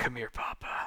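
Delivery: hushed, breathy mutter under the breath. Retelling how Jensen took out the card: muttering under his breath. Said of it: "quietly, like, under his breath".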